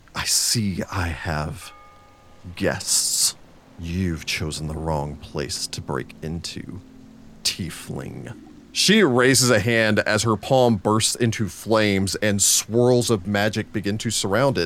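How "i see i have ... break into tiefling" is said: soft, angry, menacing villain-style hiss. Game master voicing an angered woman confronting an intruding tiefling, hissing. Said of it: "bares her teeth in a hiss".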